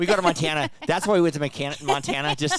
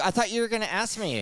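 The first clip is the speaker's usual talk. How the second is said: mock all-worked-up, high-pitched angry tone; 6 semitones higher, 3 dB quieter than usual. Retelling a complaint to a partner about a podcast intro: imitating own angry complaint. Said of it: "I was all angry".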